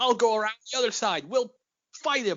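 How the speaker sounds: very high shouted yell. Retelling a scene, the speaker imitates Han Solo yelling to Chewie. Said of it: "Han is like yelling and he's like".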